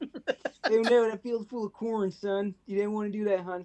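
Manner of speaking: put-on high Philly accent. Voicing Jor-El sending his son to Earth: Philly Bradley Cooper voice. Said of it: "give me Philly Bradley Cooper".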